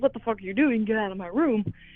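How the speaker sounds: plain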